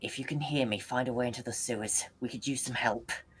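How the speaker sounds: muttering quietly under the breath. Speaking in character during a combat turn: under the breath. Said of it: "I just go under my breath".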